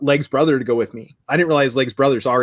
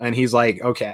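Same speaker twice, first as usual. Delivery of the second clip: plain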